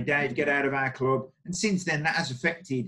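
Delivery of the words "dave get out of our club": normal talking voice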